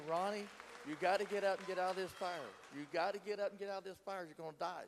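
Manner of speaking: loud hollering. Retelling a voice that urged escape from the fire: imitating someone hollering. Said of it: "he started hollering at me".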